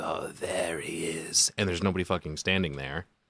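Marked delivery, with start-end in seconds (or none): 0.0-1.5 eerie possessed-sounding voice, very slow and drawn out. Retelling a movie scene, imitating Mia in a possessed-sounding voice. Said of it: "in this like possessed sounding voice".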